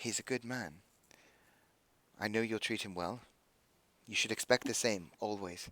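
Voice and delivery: very quiet, hushed half-whisper. Narrating a scene, voicing a woman who half-whispers to Beth while hugging her: half-whispering. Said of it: "she just whispers".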